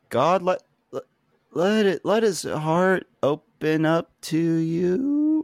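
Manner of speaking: very slow, high, cracking, stretched, drawn-out voice. Retelling a man praying after a scream interrupts: imitating a cracking voice. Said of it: "his voice cracks".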